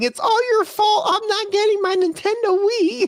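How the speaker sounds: play-acted, very high, tearful child's crying yell. Retelling a kid in line yelling at his grandma, imitating a kid yelling while crying. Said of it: "he starts yelling at her, and he was crying".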